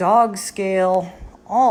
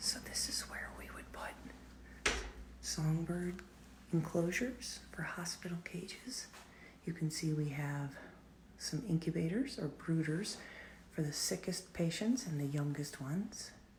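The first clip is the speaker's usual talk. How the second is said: quiet lowered voice, quieter; 2 semitones lower, 19 dB quieter than usual. Touring a songbird patient room where everyone must stay quiet: lowered voice. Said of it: "I am gonna lower my voice as I go in here".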